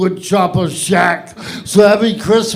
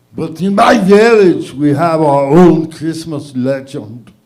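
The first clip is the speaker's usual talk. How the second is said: put-on Austrian accent, lower pitched; 4 semitones lower than usual. Telling a celebrity Christmas story as Arnold Schwarzenegger: Arnold Schwarzenegger voice. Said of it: "Arnold Schwarzenegger's Christmas story".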